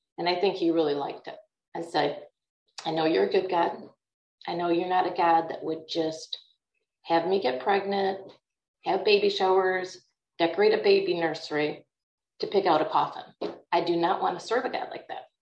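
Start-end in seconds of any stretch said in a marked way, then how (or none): none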